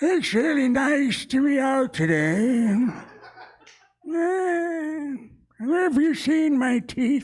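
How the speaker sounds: put-on very high old man voice. Joking that he sounds like a grandpa, then playing it up in an old grandpa voice. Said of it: "I sound like a grandpa when I say that".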